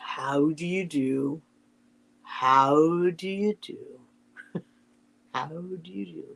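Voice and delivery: gloomy low murmur with How drawn out. Reading Winnie the Pooh aloud, trying out a line as Eeyore: Eeyore voice. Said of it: "I have to get the Eeyore voice".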